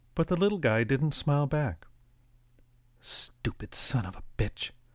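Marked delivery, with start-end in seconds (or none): 3.0-4.7 spoken in a hiss. A mother in line speaks at the young man ahead of her: hissed. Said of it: "the mother hissed".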